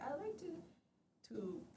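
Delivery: "to" French-tinged, drawn out, slow and swooping. Teasing the other speaker by imitating how they say "to": imitating a French-sounding "to". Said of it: "it's very French".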